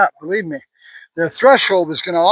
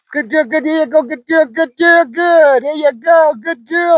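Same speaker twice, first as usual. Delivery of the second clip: cheerful, happy, high-pitched voice; 9 semitones higher than usual. Praising her while teaching her to toggle back and forth, happy voice tone. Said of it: "It's a happy voice tone".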